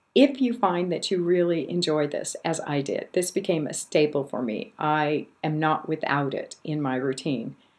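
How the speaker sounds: usual speaking voice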